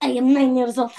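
put-on Russian accent. Improvising a conversation as a made-up Russian character, Russian accent. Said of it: "You said you have a good Russian accent".

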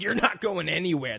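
put-on macho character voice. Retelling the Punisher's line to a shark: Macho Man voice. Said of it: "that's where the Macho Man came from".

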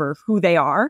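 ordinary talk, nothing marked

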